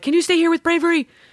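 put-on, high-pitched, called-out yelling. Retelling yelling to a neighbor in the driveway: imitating own yell. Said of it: "we yelled at one of the neighbors".

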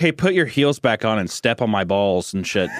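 ordinary talk, nothing marked

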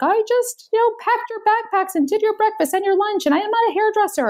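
screaming rant pitched very high, shrill. Retelling yelling at a crying daughter over her hair: imitating own past screaming. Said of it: "I was screaming at her".

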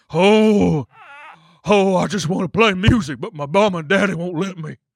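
high, slow, lingering "oh" stretched long. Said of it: "That's what [name] kinda sounded like".

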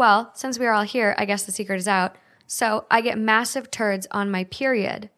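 usual speaking voice

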